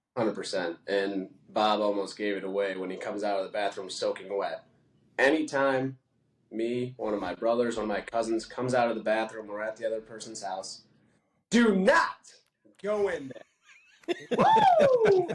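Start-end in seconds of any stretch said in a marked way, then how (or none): 11.4-15.2 very high, very slow, loud, swooping, drawn-out character voice. Acting out a favorite movie quote in the character's voice. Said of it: "you've gotta do it in the voice, and you crushed it".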